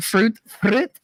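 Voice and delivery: put-on French accent. Retelling how Katie says the word fruit, imitating Katie's French accent. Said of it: "Don't know where the French accent came from".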